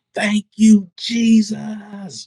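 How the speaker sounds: play-acted very high, drawn-out, full-lung shout. Retelling hearing a voice and standing up: retelling a shout at top of lungs. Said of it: "I shouted at the top of my lungs".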